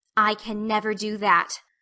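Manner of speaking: slow, firm, grim, darkly determined. Reading a girl refusing to apologise aloud: determined and dark. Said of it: "said Anne determinedly and darkly".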